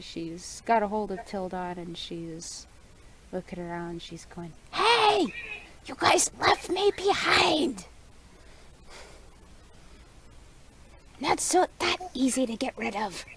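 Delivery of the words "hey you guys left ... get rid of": very high, shrill yelling. Speaker voices a character who was left behind, yelling at everything. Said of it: "She's yelling at everything".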